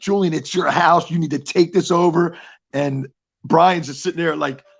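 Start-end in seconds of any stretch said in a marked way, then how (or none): 0.0-2.4 fired-up, intense, urgent urging. Retelling yelling at a fighter from ringside: imitating own screaming. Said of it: "I'm screaming like".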